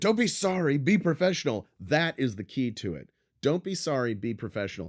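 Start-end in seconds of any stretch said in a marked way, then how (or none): 0.0-1.7 acted furious yelling, very high and loud. Retelling what someone shouted at a guy on a set, retelling an angry yell. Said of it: "He's not yelling at him".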